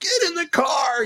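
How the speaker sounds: flipping out, very high, drawn-out freak-out. Retelling a rushed morning about being late, acting out flipping out. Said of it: "I'm like flipping out".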